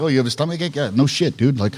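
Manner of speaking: ordinary talk, nothing marked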